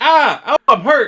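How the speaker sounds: very high, shrill, very loud fake pain cry. Speaker retelling someone who drops to the ground pretending to be hurt, imitating a fake hurt cry. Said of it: "He just pretends to have been hurt".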